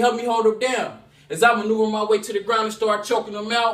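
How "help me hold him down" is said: ordinary talk, nothing marked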